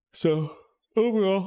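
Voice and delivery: words squeezed out mid-yawn. Wrapping up the news after a long week, yawning. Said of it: "sorry for yawning".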